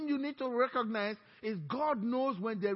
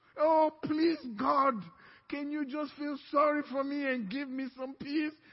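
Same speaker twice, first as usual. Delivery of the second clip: mock pleading, higher; 4 semitones higher, 4 dB louder than usual. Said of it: "begging God".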